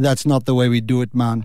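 put-on Jamaican accent in a low pitch. Telling how he turned down your request for a chat, do Usain Bolt in a Jamaican accent. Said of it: "It was a good Jamaican accent".

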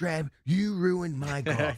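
mock yell. Retelling how the speaker started yelling at a coworker: imitating own yelling. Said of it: "I start yelling at Drab".

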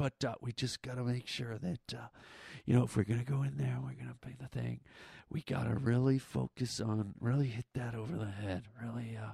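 hushed, huddled stage whisper. Retelling a coworker talking in a lobby before a meeting: imitating a coworker half-whispering. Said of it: "if we could stop whispering".

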